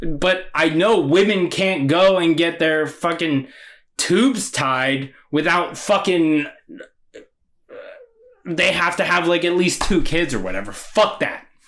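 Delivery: heated, emotional, angry, worked-up outburst. Getting a bit emotional and angry while talking. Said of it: "I know I'm getting a bit emotional".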